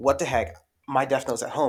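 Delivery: plain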